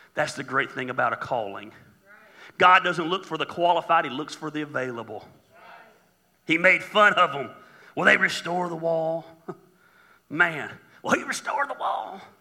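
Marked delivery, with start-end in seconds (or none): 8.0-12.2 rural drawl.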